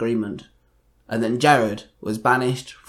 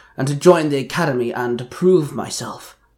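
plain

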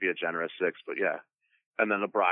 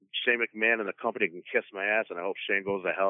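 usual speaking voice

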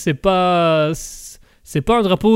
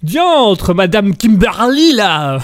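very slow, loud, drawn-out posh voice turning crude; 3 semitones higher, 5 dB louder than usual. Acting out a noble who suddenly turns crude: noble turning vulgar. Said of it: "le noble qui, à un moment donné, devient un gros beauf".

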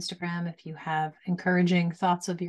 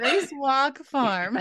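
put-on Northern US accent, pitched up; 7 semitones higher than usual. Closing an interview, the host repeats the farm's name in a Northern US accent. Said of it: "I'm going to say it in the Northern accent".

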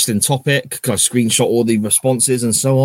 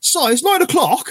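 mock very high-pitched shouting. Retelling how someone called up to him from downstairs: imitating someone shouting. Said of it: "shouts upstairs".

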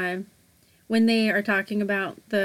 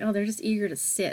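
ordinary talk, nothing marked

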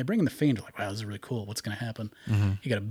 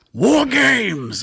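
very high, loud, over-the-top hammy announcer shout; 13 semitones higher, 11 dB louder than usual. Show how the man announced War Games, as William Regal really getting into it. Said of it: "so he'd just really get into it".

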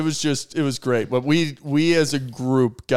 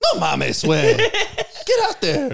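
very high, sing-song, swooping put-on bartender voice; 12 semitones higher than usual. Retelling what a bartender says during slow shifts: imitating a bartender. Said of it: "That's such a good impersonation".

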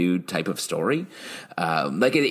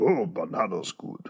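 quiet, gentle voice; 5 dB quieter than usual. Explaining the voice he does for the mustache guy, in that short mustache guy voice. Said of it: "the mustache guy goes".

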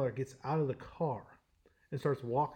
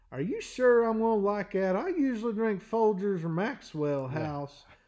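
put-on goofy voice, higher and louder; 8 semitones higher, 6 dB louder than usual. Retelling a drive-thru coffee order: put-on silly persona voice. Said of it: "keep it going".

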